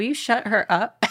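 ordinary talk

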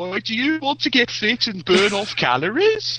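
thick Birmingham accent. Imitate the voice in a video played back in the boardroom, in a broad Birmingham accent. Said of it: "sort of broad Birmingham accent".

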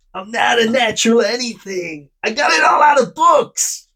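clumsy, high-pitched put-on American accent. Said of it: "I'll try and do his voice".

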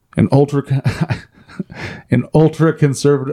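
words broken by laughter throughout. Reading a news article aloud to another speaker, laughing while talking. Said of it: "Sorry, I'm laughing".

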